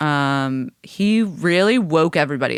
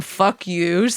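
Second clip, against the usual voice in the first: ordinary talk, nothing marked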